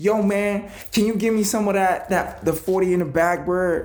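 very high-pitched put-on American accent. Acting out what he will say when he gets there, imitating an American accent. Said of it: "that was me imitating an american accent".

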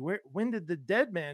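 usual speaking voice

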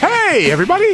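very high, squeaky little cartoon mouse voice. Greeting listeners at the start of the podcast in a Mickey Mouse type voice. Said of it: "almost like Mickey Mouse type voice".

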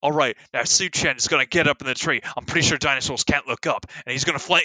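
thick put-on Australian accent. Retelling the commander's plan from a video: thick fake Australian accent. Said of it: "Australian, like, commander's like".

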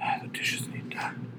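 soft, slow whisper under the breath. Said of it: "Like, real quietly".

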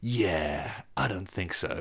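very slow delivery, every word dragged out. Retelling a scene from the films in that voice: John Wick voice. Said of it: "does that voice of it goes".

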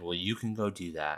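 put-on European accent. Retelling what a guy at a Starbucks door said, in a very European accent. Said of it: "in a very European accent".

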